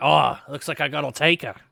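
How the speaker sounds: throat-straining put-on captain voice. Voicing the captain as a player steps forward: strained put-on captain voice. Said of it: "That hurt my voice".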